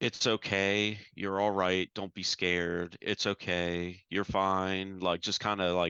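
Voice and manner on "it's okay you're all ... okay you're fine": imitated soothing angelic voices, slower. Recounting voices that kept calling to them, imitating angelic voices. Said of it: "calling to me in like uh, angelic voices".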